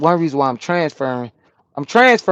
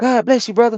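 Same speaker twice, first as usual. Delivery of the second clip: put-on real happy, bright, pitched-up tone; 8 semitones higher than usual. Retelling a man at Pilots who looked at you and greeted you, imitating a happy greeting. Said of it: "He was like real happy to see me".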